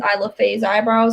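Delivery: normal talking voice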